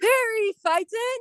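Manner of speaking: silly, goofy, very high-pitched yell. Leading everyone in yelling the name, goofy yell. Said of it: "yell in your goofiest voice".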